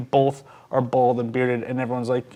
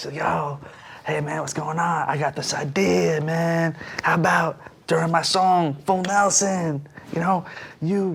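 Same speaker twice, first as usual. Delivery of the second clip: casual, laid-back rock musician speaking voice; 3 semitones higher than usual. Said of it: "He talks like this".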